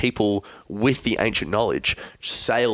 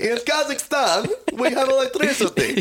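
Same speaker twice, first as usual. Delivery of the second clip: very high-pitched, goofy, silly character voice. Joking about ancient Egyptian radio: Borat voice. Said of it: "It's more Borat".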